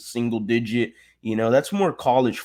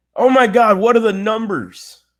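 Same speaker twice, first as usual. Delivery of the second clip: sarcastic, very high-pitched fake excited gush; 10 semitones higher, 7 dB louder than usual. Speaker mocking every Texans fan's yearly hype about the numbers, mock excitement. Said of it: "As you can tell in my tone of voice there".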